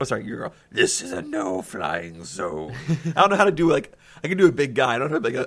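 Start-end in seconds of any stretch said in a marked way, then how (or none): 0.2-2.7 put-on old hag voice, lower, slower. Trying out voices for a character in a game, old hag voice. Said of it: "it just sounds like some old hag".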